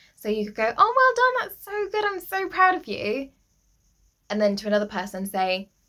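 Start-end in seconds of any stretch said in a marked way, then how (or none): 0.8-3.3 very high, bright, cheerful praising tone. Showing tone of voice for behavior management, high, smiley praising tone. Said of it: "higher pitch and smiley face type of thing".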